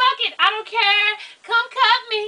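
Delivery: loud scream. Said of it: "I was screaming".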